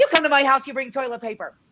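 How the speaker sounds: acted-out, very high, shrill yell. Recalling episode one, acting out Marco yelling at a passerby: imitating Marco yelling. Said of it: "he yells at them".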